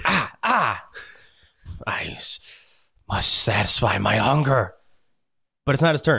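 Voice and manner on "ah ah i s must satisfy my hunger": very slow, pained, wounded monster groan. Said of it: "And he's like".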